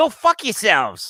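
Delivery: put-on New Jersey accent. Retelling waving from a car, the speaker quotes a lady on the corner in a new jersey accent. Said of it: "like in her New Jersey accent".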